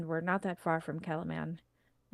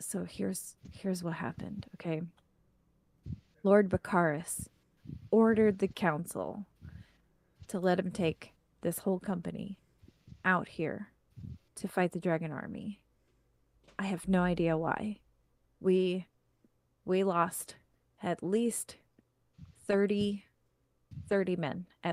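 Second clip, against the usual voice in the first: theatrical whisper. Voicing Darrett as he tells the group in the tent what happened: Darrett whispering very softly. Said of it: "he kind of whispers and uh he's speaking very softly".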